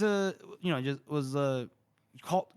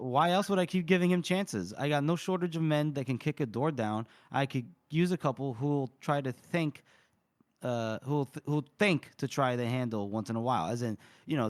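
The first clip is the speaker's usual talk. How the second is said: normal talking voice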